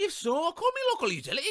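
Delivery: very high, sing-song, swooping put-on Scottish accent. Running through voices like caveman and pirate, the speaker does a scottish accent. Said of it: "And some Scottish".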